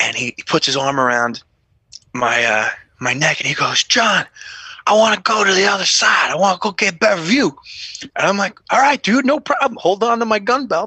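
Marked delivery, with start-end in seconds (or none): 3.8-7.6 put-on drunk man voice. Retelling what a wasted Rami said, arm around his neck: imitating drunk Rami. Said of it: "He's wasted".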